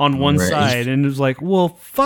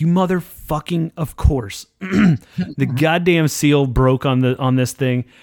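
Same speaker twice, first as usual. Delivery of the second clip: plain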